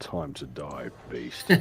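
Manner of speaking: voice sunk to the bottom register, very deep. A player character strikes a beast in a tabletop game, in a very low voice. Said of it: "Says in a very low voice".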